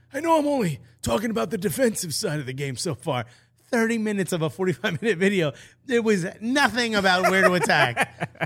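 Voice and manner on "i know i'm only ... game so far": rough, raspy sports-analyst style voice. Quoting a speaker from a tactics video: imitating his raspy voice. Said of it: "that raspy voice".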